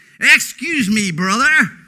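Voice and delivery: put-on American accent, loud. Irish speaker retelling how a boy came over at the bus stop, American accent. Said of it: "He spoke with American accent".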